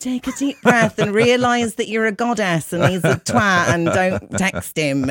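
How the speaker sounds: motivational, inspirational self-help narrator voiceover. Imitating the woman in a self-help video: imitating a self-help video woman. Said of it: "she's got a weird effect on her voice, and she's saying stuff like".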